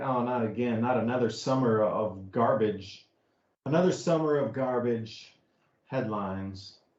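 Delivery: slow, facetious, sarcastically weary, fed-up tone. Mocking the yearly climate news, facetious, fed-up tone. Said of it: "Do I sound a little facetious".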